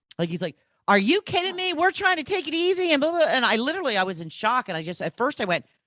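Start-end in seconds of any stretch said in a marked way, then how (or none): 0.9-2.9 high-pitched, shrill screaming outburst. Retelling how a pickleball partner screamed at the speaker: imitating someone screaming. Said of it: "just screamed at me".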